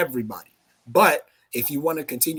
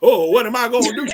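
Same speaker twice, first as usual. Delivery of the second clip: mock very loud, high-pitched, flustered panicking cry; 8 semitones higher, 9 dB louder than usual. Mocking a type of person who has no money: imitating someone panicking. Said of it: "you sitting there panicking".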